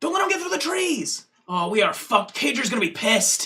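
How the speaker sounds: high, swooping call, called out. Voicing a human pursuer chasing the party: pursuer shouting while chasing. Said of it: "you hear one of them go".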